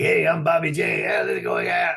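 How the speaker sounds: raspy voice full of rasp. Telling how a friend impersonated the speaker's voice, the speaker repeats it: retelling a raspy-voice impression. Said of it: "doing impressions of a friend".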